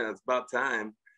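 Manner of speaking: soft, dry, sarcastic teasing with a laugh in it. Recalling his reaction on the phone, imitating Jim Boeheim's sarcastic smirk. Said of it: "The old Jim Boeheim smirk and laugh".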